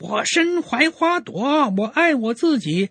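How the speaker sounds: squeaky high preacher voice.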